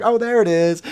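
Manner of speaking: put-on little girl Southern accent. Retelling a little girl's question about frogs: imitating a little girl's southern accent. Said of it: "she's got this unbelievable Southern accent".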